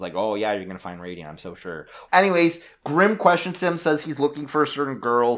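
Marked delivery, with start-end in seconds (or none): 0.2-1.9 dismissive, scoffing brush-off. Retelling a character's reply to a sorcerer: imitating Grimm scoffing. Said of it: "he kinda scoffs".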